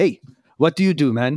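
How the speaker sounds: put-on voice with mixed Serbian and German accent. Retelling what a Serbian German man said: Arnold Schwarzenegger-like voice. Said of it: "kinda sounds like Arnold Schwarzenegger".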